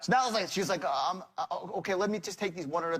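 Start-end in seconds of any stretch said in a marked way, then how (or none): 0.8-3.0 imitated, mock-fearful, frightened woman's voice. Speaker retelling a phone call, imitating a frightened woman on the line. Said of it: "I can hear the fear".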